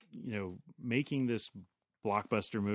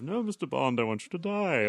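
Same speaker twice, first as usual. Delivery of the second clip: put-on suave villain voice, higher and louder; 4 semitones higher, 6 dB louder than usual. Imitating the dubbed Goldfinger speaking to Bond: suave Goldfinger voice. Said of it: "the suave".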